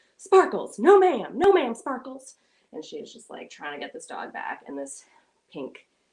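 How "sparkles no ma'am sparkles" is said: high-pitched, drawn-out screaming yell. Telling how a neighbor called back her pug, imitating the neighbor screaming at her dog. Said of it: "My neighbor was screaming at her dog".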